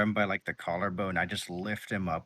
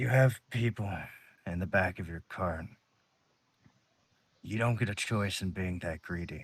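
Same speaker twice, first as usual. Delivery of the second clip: hushed whisper. Retelling leaning over to a man and speaking into his ear, whispering. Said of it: "I whisper in his ear and I say".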